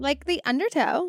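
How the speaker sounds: poor Valley Girl voice attempt. Joking about the episode number: bad valley girl voice. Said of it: "I can really do Valley Girl, and that was terrible".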